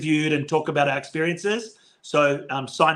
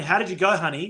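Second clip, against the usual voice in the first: put-on Australian accent; 3 semitones higher than usual. Retelling what their mom asked after a championship win, imitating an Australian accent. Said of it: "Very Australian".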